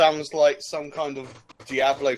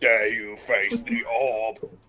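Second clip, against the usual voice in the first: deep-throated robotic alien voice, lower pitch; 3 semitones lower than usual. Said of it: "I imagine it talking like some kind of deep-throated Dalek".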